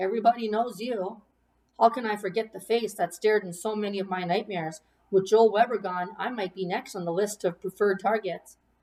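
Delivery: ordinary delivery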